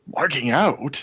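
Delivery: put-on weak, offended mutter under the breath. Recapping a favorite moment of a show, imitating Loki's offended mutter. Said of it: "in this kind of offended, kind of weak voiced, under his breath".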